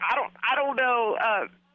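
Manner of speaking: normal talking voice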